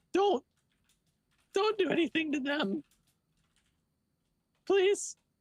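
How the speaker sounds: crying, tearful pleading voice. Playing a goblin character who begs for her parents: crying while pleading. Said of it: "And she's crying".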